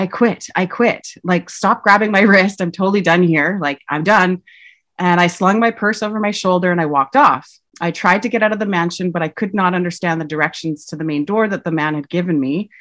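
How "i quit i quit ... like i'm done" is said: normal talking voice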